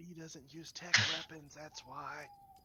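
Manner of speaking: stage whisper, whispered aside. A player interjects an explanation during a scene; stage whisper. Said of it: "And in a stage whisper".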